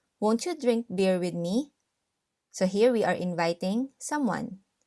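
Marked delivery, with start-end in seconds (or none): none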